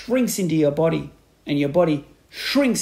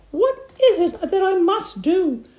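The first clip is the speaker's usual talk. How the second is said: very high, drawn-out cried-out voice. Narrator reading Mrs. Twit answering Mr. Twit's grisly grin, crying out. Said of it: "cried Mrs. Twit, clutching her cheeks".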